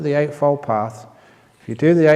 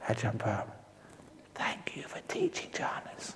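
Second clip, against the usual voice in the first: hushed, secretive, confiding whisper, barely audible; 4 semitones lower, 18 dB quieter than usual. Speaker recalls a man taking him aside at a monastery to thank him, retelling a whisper.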